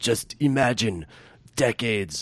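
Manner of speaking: put-on heavy French accent. Retelling what he said to young people at the bar, in a thick French accent. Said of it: "in his thick French accent".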